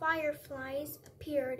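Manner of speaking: ordinary delivery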